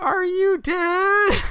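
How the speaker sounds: very high, very loud shrill yell, stretched. Recapping a scene where Connie yells to her husband Curtis, yelling as Connie. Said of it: "And then she yells".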